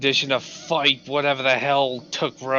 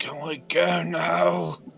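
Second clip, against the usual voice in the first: feeble, weak, creaky voice; 3 semitones higher, 3 dB quieter than usual. Voicing Belvis asking the party to leave: weak voice. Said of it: "kinda weakly says".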